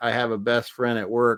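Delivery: ordinary talk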